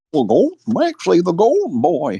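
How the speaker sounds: put-on very high, goofy old-timer prospector voice. Joking with friends about the golden boy nickname, in a prospector voice. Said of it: "You sound like a prospector".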